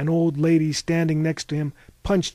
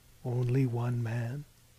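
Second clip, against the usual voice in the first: usual speaking voice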